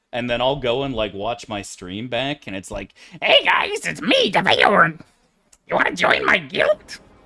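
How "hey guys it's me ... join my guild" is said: squeaky, high-pitched goblin voice. Imitating how the own voice sounds on stream playback: imitating own high goblin-like voice. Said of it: "Sound like the fucking goblin from World of Warcraft".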